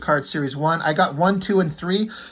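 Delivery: ordinary delivery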